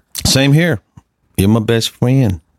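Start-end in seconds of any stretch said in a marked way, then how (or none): 1.4-2.4 mock childlike voice, higher pitched. Telling the other speaker they are a best friend: put-on toddler voice. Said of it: "Why you say it like a toddler?".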